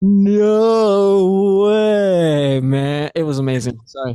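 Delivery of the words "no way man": "no" stretched out, raised, loud and high. Showing another speaker how they just sounded: imitating another speaker's voice. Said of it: "you sounded like this".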